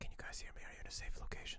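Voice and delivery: very quiet, hushed, barely audible whisper. Speaking to the group over comms in character: whispering very quietly. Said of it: "I'm gonna whisper very quietly".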